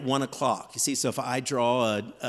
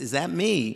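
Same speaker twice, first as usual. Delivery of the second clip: put-on thick New York accent, much slower. Speaker retelling what a model said on seeing their drawing, heavy New York accent. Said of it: "she came over with a heavy New York accent".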